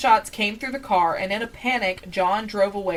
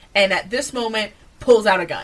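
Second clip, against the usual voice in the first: usual speaking voice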